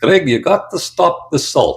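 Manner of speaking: attempted South African accent. Retelling a doctor's one piece of advice, speaker quotes him in an attempted south african accent. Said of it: "I tried to do the accent there".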